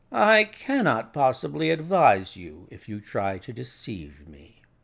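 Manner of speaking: plain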